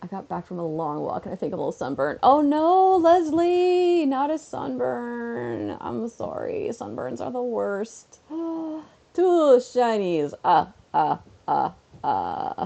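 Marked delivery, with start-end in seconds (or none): 8.3-12.7 drawn-out delivery with swooping pitch. Counting items aloud, doing the Count impression. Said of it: "I don't even know if I'm doing the impression right".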